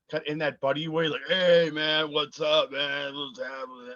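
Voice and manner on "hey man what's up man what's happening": put-on drunk man voice. Retelling how a drunk moviegoer greeted them in line: imitating a drunk man. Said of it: "drunk as a skunk".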